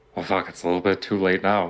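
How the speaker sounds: grumbled, quiet, under-the-breath muttering. Stepping forward in character, muttering under breath. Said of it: "saying under my breath".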